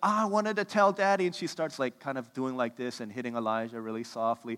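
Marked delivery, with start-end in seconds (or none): 0.0-1.3 mock teary, upset, high crying little-girl voice. Retelling a child's tantrum at dinner time: imitating a child crying. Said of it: "Elise starts crying. She's like".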